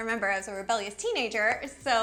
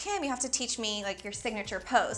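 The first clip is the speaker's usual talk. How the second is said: usual speaking voice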